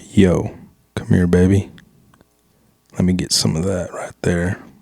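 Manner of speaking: laid-on seductive come-on voice. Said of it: "Your seducing voice".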